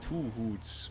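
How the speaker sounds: put-on, teasing Minnesota accent. Repeat the words after the Minnesotan came out, in a mocking Minnesotan accent. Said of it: "make fun of my Minnesotan accent".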